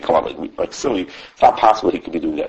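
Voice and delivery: normal talking voice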